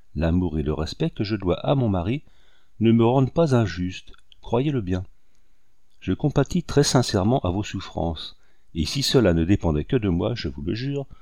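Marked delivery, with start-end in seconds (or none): none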